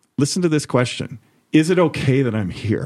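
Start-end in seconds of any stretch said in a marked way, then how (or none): 1.5-2.9 put-on emotional pleading, much higher pitch. Retelling a conversation, quoting a man who starts getting emotional, retelling an emotional plea. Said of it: "he starts like getting emotional".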